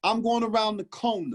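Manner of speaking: high-pitched Southern drawl. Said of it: "this woman from the South".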